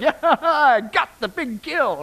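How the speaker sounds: proud, excited pet voice, drawn out slowly. Describing a pet carrying a carcass in its mouth, voicing the excited pet. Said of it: "They're so excited".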